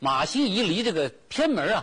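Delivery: ordinary delivery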